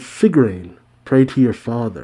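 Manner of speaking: usual speaking voice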